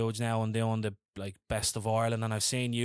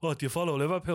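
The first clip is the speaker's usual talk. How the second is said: playful, teasing, joking tone, pitched up; 6 semitones higher than usual. Retelling a question they asked a man about Liverpool, the speaker jokingly repeats it. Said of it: "I jokingly said".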